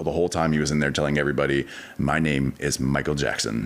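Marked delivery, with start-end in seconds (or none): none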